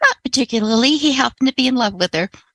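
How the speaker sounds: ordinary delivery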